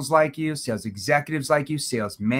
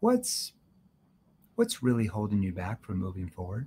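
empathetic, caring, concerned, animated tone; 6 semitones lower, 6 dB quieter than usual. Teaching how to ask questions, demonstrating a concerned tone. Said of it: "See, that's a concerned tone".

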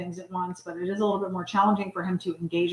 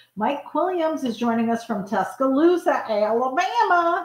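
playful, fun, put-on Alabama accent, raised voice; 6 semitones higher, 4 dB louder than usual. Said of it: "you're kinda doing an accent".

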